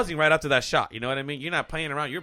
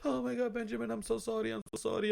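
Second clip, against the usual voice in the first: acted, very high-pitched, tearful sobbing; 9 semitones higher, 7 dB quieter than usual. Retelling a mother's apology on waking up: imitating mom crying. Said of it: "and she was crying".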